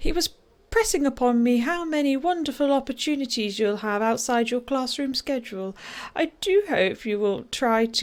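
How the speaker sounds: put-on mother voice, done with care. Speaker voicing a mother addressing her child, in best mummy voice. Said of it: "I'll do it in my best mummy voice".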